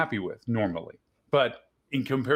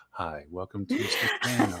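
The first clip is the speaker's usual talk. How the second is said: sultry, low, swooping late-night DJ voice; 4 semitones lower than usual. Telling a guest their voice sounds like a radio dj, imitating it: late-night album dj voice. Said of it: "some late night album disc jockey".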